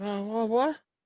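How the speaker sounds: just-woken, groggy, confused, stumbling half-awake stammer. Retelling waking the mother to say there's a bat: imitating a groggy just-woken mother. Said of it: "she's kinda waking up".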